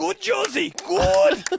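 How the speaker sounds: put-on voice, pitched way up, squeaky and rasping. Doing the only impression they can, the speaker gives a Jurgen Klinsmann impression. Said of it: "I can do only one impression, which is Jurgen Klinsmann".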